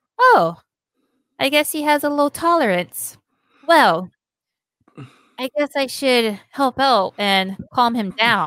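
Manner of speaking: super calm, unbothered, nonchalant la-di-da ease. Retelling an anime scene where Lee stays calm: imitating a super calm character. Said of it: "super calm about it".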